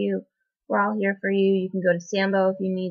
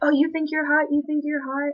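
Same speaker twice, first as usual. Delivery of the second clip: pitched-up, loud, jeering yell; 7 semitones higher than usual. Recounting men in a passing truck yelling at the group, retelling men yelling. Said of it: "they started yelling at us".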